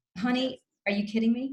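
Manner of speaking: fed-up, exasperated, incredulous comeback. Showing a bad habit in arguments: imitating an eye-rolling retort. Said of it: "the rolling of eye, of the eyes".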